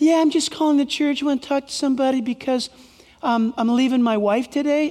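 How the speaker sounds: put-on, imitated girlish voice. Acting out a man's phone call to the church, mistakenly imitating a girl's voice. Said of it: "That's the girl's voice".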